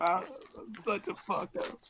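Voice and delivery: high, hushed, stifled private crying. Voicing Shoto alone in a cold dark cell: acted crying to himself. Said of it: "crying to himself".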